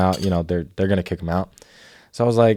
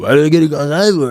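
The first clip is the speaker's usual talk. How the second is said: mock, loud, high, badly slurred, smeared words; 7 semitones higher, 5 dB louder than usual. Retelling what a man told a flight attendant: imitating loud slurring. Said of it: "slurring a lot".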